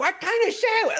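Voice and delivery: shouting. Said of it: "they're yelling at each other".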